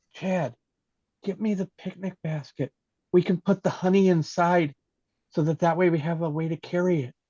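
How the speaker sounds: put-on whispered delivery. Speaking in character to Chad during the game: whispering in character. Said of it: "I'm gonna whisper to".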